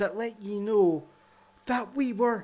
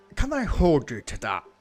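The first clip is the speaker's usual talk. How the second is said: sarcastic, put-on Scottish accent; 5 semitones lower than usual. Repeating the doubtful question in character: put-on Scottish accent. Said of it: "I don't know why I'm putting the Scots through".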